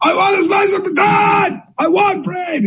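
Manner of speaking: mock very high, shrill child's shouting. A parent describes their kid's constant shouting, imitating the child shouting. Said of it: "this constant shouting thing".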